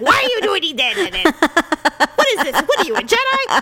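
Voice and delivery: high-pitched puppet creature character voice. Recalling a man who sounded like the flying puppet, the speaker imitates his puppet-like voice. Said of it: "He sounded like the puppet".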